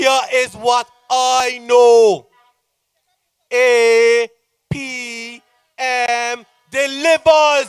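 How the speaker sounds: slowed down. Speaker repeats the slogan for the audience, slowed down. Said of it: "I will slow it down a little bit slower".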